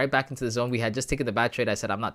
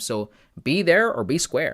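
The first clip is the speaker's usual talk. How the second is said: put-on stock Canadian accent; 4 dB louder than usual. Host signing off to the audience until tomorrow, put-on canadian voice. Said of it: "in my Canadian voice".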